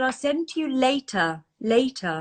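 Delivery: imitated English accent. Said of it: "so sort of lovely and English".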